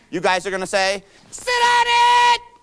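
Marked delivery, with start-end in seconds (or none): 1.3-2.4 very high scream at full force. Leading a crowd call-and-response, showing what to shout back, screaming. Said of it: "as you're screaming, sit on it as loud as you can".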